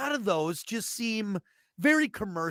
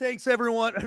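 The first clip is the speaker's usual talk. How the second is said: voice cracking, breaking mid-word; 2 semitones higher than usual. Thanking everyone at the end of the show, voice cracking. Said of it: "my voice just cracked".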